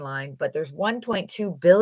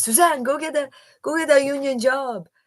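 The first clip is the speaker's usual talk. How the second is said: put-on French accent spoken with raised pitch; 8 semitones higher than usual. Quoting her mom's advice to her, in her mom's French accent. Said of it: "in her French accent".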